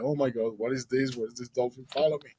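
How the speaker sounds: acted-out sobbing, put-on crying. Telling of finding a dolphin behind them in the water, retelling own crying. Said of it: "And I start crying like".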